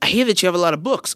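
high, fast, mock-angry voice.

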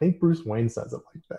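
ordinary delivery

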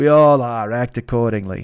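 mock Boston accent, poorly done. Quote one of your favorite movie lines of all time, in Jack Nicholson's bad Boston accent. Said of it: "does a bad Boston accent".

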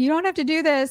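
play-acted high, tearful begging through crying. Retelling a scene, voicing someone held at ice-pick point: imitating someone crying. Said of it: "Lisa's, like, crying".

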